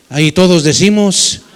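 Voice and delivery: loud calling voice.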